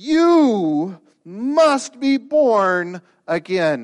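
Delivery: very slow, loud, emphatic, personal, "you" stressed. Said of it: "he says it in a very personal, emphatic way".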